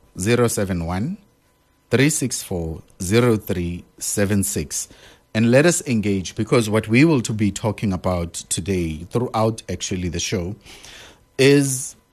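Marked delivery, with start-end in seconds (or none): 0.2-4.9 carefully slow and deliberate. On a show, repeating the WhatsApp number for listeners, slow and deliberate. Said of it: "Let me say that slowly for you".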